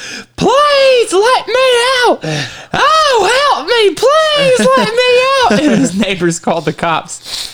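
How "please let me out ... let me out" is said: very high, slow pleading parrot voice, "oh" drawn out. Retelling a video of a parrot begging to be let out: imitating a parrot calling for help. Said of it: "his parrot was inside going".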